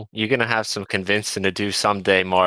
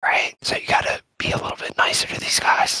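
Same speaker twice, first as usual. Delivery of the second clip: whispered, barely voiced, hushed. Talking to a character in the mind, whispering. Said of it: "Why are you whispering?".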